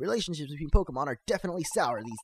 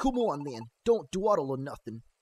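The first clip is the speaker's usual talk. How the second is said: put-on New Jersey accent. Voicing a game character leading the visitors to the carpenter, in a put-on jersey accent. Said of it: "I imagine them having like a Joyzy accent".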